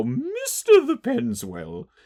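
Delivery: very high, swooping character voice. Repeating the HarmonyCon-only address from their bit, in the Miss Harshwinny voice. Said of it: "we do the Miss Harshwinny voice".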